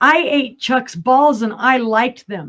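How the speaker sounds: put-on bold, high, blurted announcing exclamation. Retelling a story of answering relatives' question, reenacting a loud exclamation. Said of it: "I exclaim in quite a loud voice".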